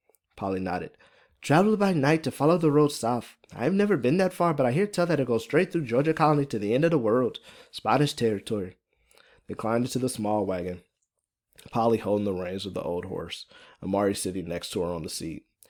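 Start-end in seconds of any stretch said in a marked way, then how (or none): 1.4-8.8 put-on higher, thick, strong Irish accent. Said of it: "Fiona's, uh, Irish accent is pretty thick and strong".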